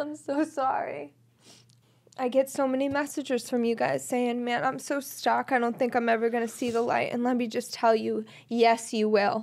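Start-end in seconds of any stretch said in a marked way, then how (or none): 0.0-1.1 soft, tearful, apologetic voice through tears. Speaker breaks down while describing a longed-for friend, crying while apologizing. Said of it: "I can't believe I'm crying like this".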